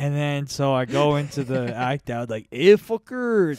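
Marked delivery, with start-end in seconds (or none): 2.5-3.6 played-up Mexican accent. A speaker acts out his joke about his dad, in a stereotypical mexican accent. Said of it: "I do like a pretty stereotypical Mexican".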